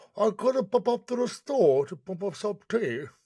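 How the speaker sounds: bad British accent. Asked to try a UK accent with friends, bad British accent. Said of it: "can you say something in U K accent so I can try to repeat it?".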